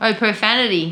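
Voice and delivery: ordinary talk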